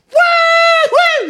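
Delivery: very high, very loud, shrill, drawn-out scream. Retelling how a guy reacted to a first-play touchdown: retelling a top-of-lungs scream. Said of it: "screams at the top of his lungs like".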